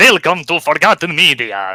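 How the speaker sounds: drawn-out vampire voice. Recalling the intro to a Halloween episode of his series, doing a Dracula impersonation. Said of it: "I tried to do the Dracula impersonation".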